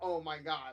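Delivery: loud, joyous, delighted, gleeful outburst. Retelling a friend meeting a guitarist: imitating joyous gleeful exclamation. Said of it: "all joyous and glee".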